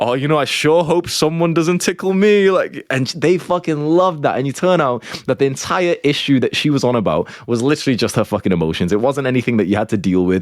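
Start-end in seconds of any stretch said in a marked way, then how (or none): 0.0-2.5 higher-pitched playful teasing voice. Acting out what to say while tickling someone: imitating playful teasing. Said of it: "you play around with her, like".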